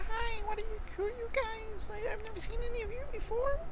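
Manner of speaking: soft, tiny, very high-pitched kitten voice. Voicing a kitten greeting the group for the first time, small kitten voice. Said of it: "It's hard to do a small voice".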